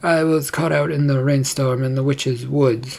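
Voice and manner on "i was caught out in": ordinary delivery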